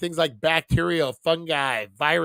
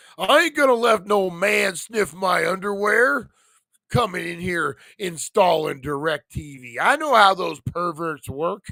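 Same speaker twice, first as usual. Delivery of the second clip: put-on old-man character voice; 2 semitones higher than usual. Doing a joking bit in an old man voice. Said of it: "sounds like an old man".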